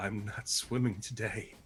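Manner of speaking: speaking through coughs. Voicing a character who is coughing up golden liquid: coughing while speaking. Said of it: "coughing up some ki-".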